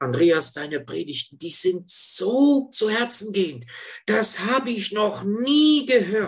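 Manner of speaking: put-on old man voice in Low German.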